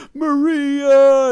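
high, loud, mocking immature kid yell.

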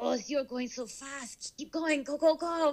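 put-on German accent. Imitating a voice heard while going fast, in a German accent. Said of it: "Is it a German accent?".

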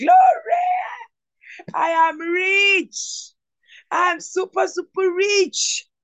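high, rich, drawn-out, proclaiming near shout. Leading listeners in spoken declarations, almost shouting. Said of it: "I'm almost shouting where I am".

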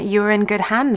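ordinary talk

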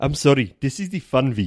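put-on South African accent. Trying out an accent that keeps coming out differently, south african accent. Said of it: "It was South African".

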